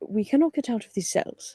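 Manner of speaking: hushed whisper in a put-on voice. Whispering in character to a monkey while locked in cells: whispering in character. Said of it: "I'm just whispering to the monkey".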